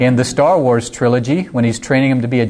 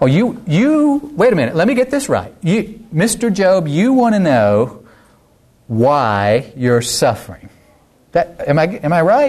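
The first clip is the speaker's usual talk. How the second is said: put-on sarcasm, much higher; 5 semitones higher than usual. Speaker retelling God's reply to Job, acting out sarcastic mockery. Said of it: "It's terrible sarcasm going on".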